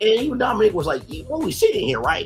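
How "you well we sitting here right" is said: cartoon mouse character voice. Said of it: "a Jerry voice from Tom and Jerry".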